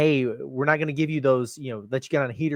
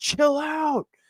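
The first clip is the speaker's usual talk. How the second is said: put-on very high, loud shrieking scream; 13 semitones higher than usual. Retelling a reaction to a player taking off in transition: imitating own scream. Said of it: "I literally screamed out loud".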